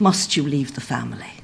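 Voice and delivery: mock-sad voice. Retelling the King's reply to news of Ireland leaving, mock-sad quoted reply. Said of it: "very sadly".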